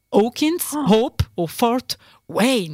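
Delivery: names said slowly in an English accent. Reading quiz answer options aloud: English accent on the names. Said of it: "avec mon super accent anglais".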